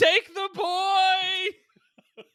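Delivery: very high-pitched, very loud shout. Retelling what a kid yells during a chupacabra tent game: imitating a kid yelling. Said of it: "And he just yells".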